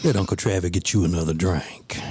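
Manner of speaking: put-on flirty, smooth voice. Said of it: "talking to her like she's in the club".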